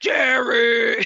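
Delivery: voice suddenly pitched low. Retelling a movie scene of a character calling out, imitating a sudden low-pitched call. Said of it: "all of a sudden she goes, ... lower the octave".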